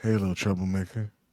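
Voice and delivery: seductive, very low, sexy half-whisper. Told to say the line in a half-whisper with voice, trying a sexy half-whisper. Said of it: "You gotta do like that whisper".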